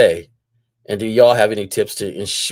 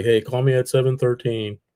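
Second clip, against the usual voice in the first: deadpan, matter-of-fact, dry and flat; 3 semitones higher, 4 dB quieter than usual. Showing how a call-me line with a phone number lands: dry delivery. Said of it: "I can say it dry like".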